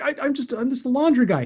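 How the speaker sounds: high, whiny, complaining voice. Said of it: "starts whining".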